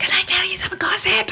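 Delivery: high, giggly, gossipy whisper.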